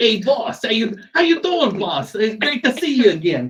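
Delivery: put-on high-pitched, excited New Jersey accent. [name] excitedly welcomes back his new boss, in [name]'s New Jersey accent. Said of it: "in a New Jersey-esque accent".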